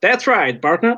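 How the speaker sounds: put-on, played-up high Texan cowboy accent. Reacting to a friend's accent attempt, answering in a put-on texas accent. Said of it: "it's like we're in Texas".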